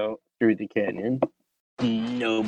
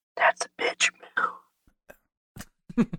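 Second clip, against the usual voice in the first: breathy, secretive whisper. In the game, turning to Cyrus and speaking into his ear: whispering. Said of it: "and I whisper in his ear".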